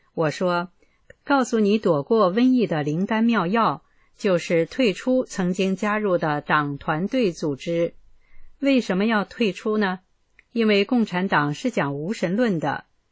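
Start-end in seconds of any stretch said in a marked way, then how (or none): none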